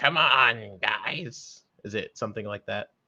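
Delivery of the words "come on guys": video game alien character voice. Asking the others whether the game's alien character sounded like this: imitating the game's alien character. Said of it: "a voice like".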